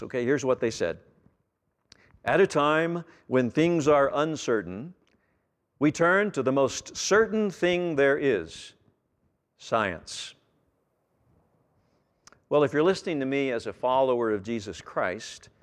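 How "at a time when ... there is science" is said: slow, deliberate commercial announcer voice. Speaker quoting a commercial to his listeners, in a commercial announcer voice. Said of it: "you can imagine their best announcer voice".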